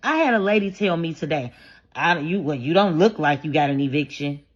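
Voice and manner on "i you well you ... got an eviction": put-on suspicious tone, lower pitched. Retelling what a lady told her today, imitating a suspicious tone. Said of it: "She said it like she was suspicious".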